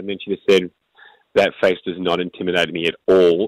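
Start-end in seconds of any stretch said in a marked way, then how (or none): 1.3-3.5 put-on dry, expressionless, flat monotone deadpan. Retelling a staring contest before a game, quoting the other player: imitating a deadpan delivery. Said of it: "Again, deadpan".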